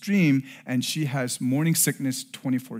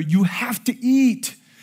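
insistent, raised, slow, almost shouted; 9 semitones higher, 6 dB louder than usual. Retelling telling his wife at the table she must eat: imitating almost yelling. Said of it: "almost yelling at her".

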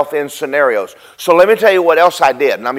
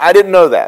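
ordinary delivery

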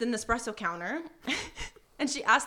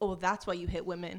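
acted, low, dry, expressionless deadpan tone; 6 semitones lower, 4 dB quieter than usual. Retelling a quarrel, quoting the woman's reply: imitating a straight-faced delivery.

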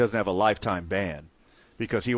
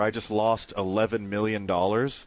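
ordinary delivery

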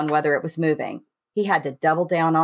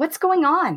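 panicked, pitched way up, very high; 11 semitones higher than usual. Woken suddenly as Patrick fights for control, Trish asks in a panicked voice. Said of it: "Her voice panicked".

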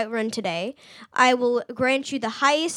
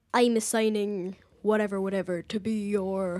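put-on deep, soft, somewhat Scottish accent; 4 semitones lower, 5 dB quieter than usual. Quoting a man who names you his Thane, in a deep, slightly Scottish voice. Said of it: "he's sort of Scottish, but, like, in a deep voice".

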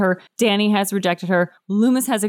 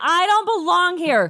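shrill, very high shriek; 10 semitones higher than usual. Game narrator voices a lunging character whom the players try to calm: screaming. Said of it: "And she's screaming".

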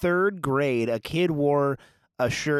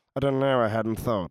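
put-on reluctant man voice, lower pitch; 3 semitones lower than usual. Retelling a reluctant man's answer to a woman: imitating a reluctant man. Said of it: "That's a great impression".

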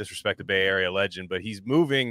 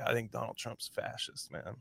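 hushed, conspiratorial whisper, very quiet; 3 semitones higher, 14 dB quieter than usual. Imitating a Berkeley guy who whispers a political opinion: imitating someone whispering. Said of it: "where they have to whisper to you".

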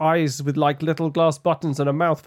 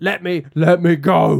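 loud, crying-out creature voice; 4 dB louder than usual. Narrating a story where the listener grabs a boggart, creature crying out. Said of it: "it cries".

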